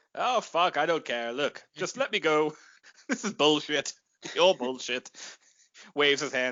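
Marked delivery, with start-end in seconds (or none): 0.2-5.2 put-on indifferent, bored voice, lower pitch. Pitching a scene where stormtroopers stop him: imitating completely ambivalent Alec Guinness. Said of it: "completely ambivalent Sir Alec".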